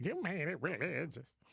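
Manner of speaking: weak, wimpy, caving, backing-down tone. Imitating a caller who wimped out: imitating Sincere wimping out. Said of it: "That's the kind of voice I give to".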